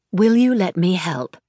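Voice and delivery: steady, calm, bracing, nanny-like reassuring voice. A woman approaches a distressed older woman and offers to help, in a calm, bracing tone. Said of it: "she said in a calm, bracing tone".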